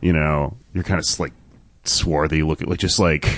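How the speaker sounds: ordinary talk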